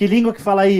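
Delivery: ordinary delivery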